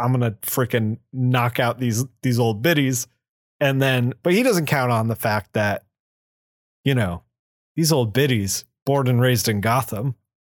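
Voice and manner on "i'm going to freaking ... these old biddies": ordinary talk, nothing marked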